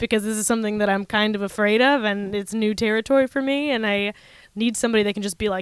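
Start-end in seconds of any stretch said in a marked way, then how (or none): none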